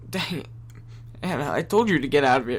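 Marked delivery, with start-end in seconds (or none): none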